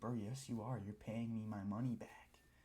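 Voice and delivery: imitated pissed-off delivery. Retelling a repair-payment argument, imitating someone pissed off. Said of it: "he's pissed off about it".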